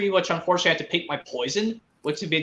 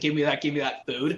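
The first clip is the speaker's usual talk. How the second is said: imitated deeper man's voice; 3 semitones lower, 3 dB quieter than usual. Retelling a line from a movie's audio track: imitating a deeper man voice. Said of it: "this deeper man voice saying".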